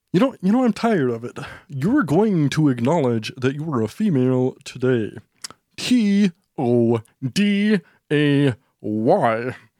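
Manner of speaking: today spelled letter by letter, Y stretched. Acting out a mock debate, doing a Jordan Peterson impression. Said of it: "I'm gonna be Jordan Peterson".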